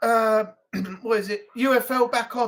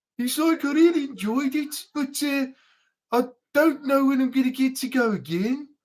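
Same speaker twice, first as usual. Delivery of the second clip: downbeat, glum, bored-sounding Birmingham accent; 2 semitones higher than usual. Explaining how the accent always sounds down, speaker demonstrates a Birmingham accent. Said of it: "Try and be happy with a Birmingham accent".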